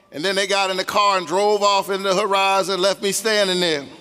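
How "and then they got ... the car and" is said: usual speaking voice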